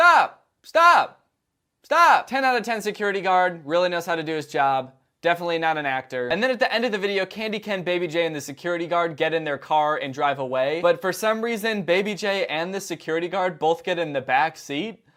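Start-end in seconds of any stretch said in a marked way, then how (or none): 0.0-2.3 shrill yelling, very high and very loud. Retelling how a security guard yelled to stop someone: imitating a yell. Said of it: "tries to stop him by yelling".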